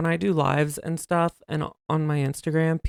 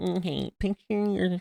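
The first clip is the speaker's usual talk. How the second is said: grating put-on voice, quieter; 6 dB quieter than usual. Imitating John leading voice therapy: imitating John's grating voice. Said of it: "John sounds like nails on a chalkboard".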